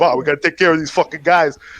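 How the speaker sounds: put-on Italian accent, mobster voice. Retelling a cartoon where Flintstones are mobsters: imitating an Italian mobster. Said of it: "he's all, like, Italian".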